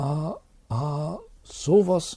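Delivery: high-pitched stammering, catching on first sounds. A teacher, reading a crumpled letter, reacts: stammering. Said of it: "Stotterte er".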